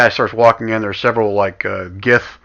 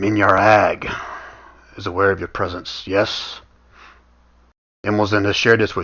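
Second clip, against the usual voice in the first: low, hoarse, raspy near-whisper; 3 dB quieter than usual. Reading aloud what a hooded figure says; low raspy near-whisper. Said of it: "you can hear kind of a low, raspy voice. I mean, it's almost like he's whispering".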